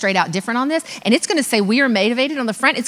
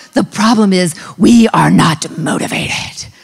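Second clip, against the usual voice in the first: loud, very slow, lashing-out dragon voice; 5 semitones lower, 7 dB louder than usual. Quoting a mean senior lashing out, the speaker imitates her dragon-like voice. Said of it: "she talks like a dragon".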